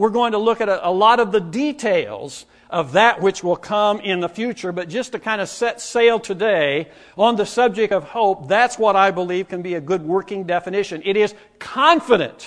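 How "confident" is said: confident leaned on hard. Giving listeners a working definition of hope, stressing 'confident'. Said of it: "I emphasize that word".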